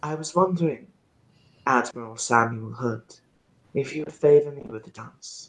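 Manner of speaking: put-on soft voice with faint trace of Persian accent. In a role-play scene, Ismara addresses the admiral, in a very slight Persian accent. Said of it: "she will say in a very, very slight Persian accent".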